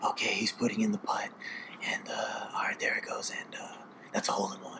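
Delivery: very quiet, hushed, whispered play-by-play commentary. Comparing golf to baseball, imitating a golf announcer whispering. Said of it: "even the announcers whisper".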